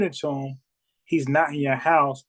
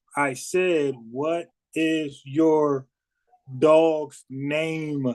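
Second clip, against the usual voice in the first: acted-out, mock-slow, mocking delivery. Retelling how he spoke to her to play her as dumb: mock-slow speech. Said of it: "he kind of like said it like slow".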